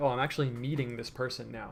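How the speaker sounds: normal talking voice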